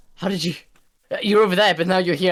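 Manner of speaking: freaking out. Reacting to the other speaker suddenly being right there: freaking out. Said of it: "I'm freaking out".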